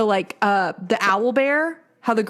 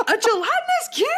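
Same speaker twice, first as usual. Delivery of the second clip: mock thrilled, very high, excited squeal; 13 semitones higher than usual. Recalling a game moment with a gelatinous cube, the speaker re-enacts a scream. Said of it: "Like I'm screaming".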